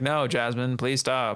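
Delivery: boring, flat monotone reading delivery. Showing how a line would sound without voices: boring flat delivery. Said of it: "It'd be boring if I was just like".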